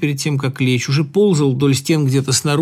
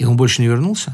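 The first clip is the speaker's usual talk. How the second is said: ordinary delivery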